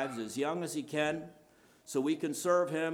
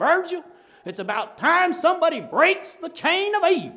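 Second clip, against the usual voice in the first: fake American southern accent; 12 dB louder than usual. Quoting what a man said to virgil, imitating his southern accent. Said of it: "And his southern accent".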